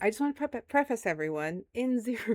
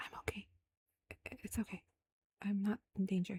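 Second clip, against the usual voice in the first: hushed, very quiet whisper; 9 dB quieter than usual. Voicing a character who whispers reassurance to a player: whispering in character. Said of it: "She does whisper to you".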